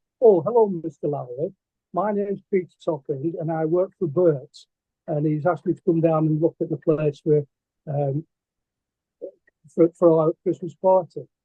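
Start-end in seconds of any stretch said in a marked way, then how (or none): none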